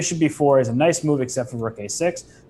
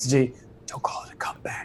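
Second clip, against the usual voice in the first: hushed, soft, breathy stage whisper; 6 dB quieter than usual. Speaker quotes a woman from a commercial, retelling her whisper. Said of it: "she whispers it".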